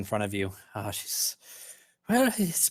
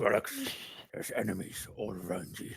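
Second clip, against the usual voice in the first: put-on deep old dwarf man voice; 5 semitones lower, 7 dB quieter than usual. Voicing a voice heard in Grolix's head, dwarf voice. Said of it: "Why am I doing my dwarf voice?".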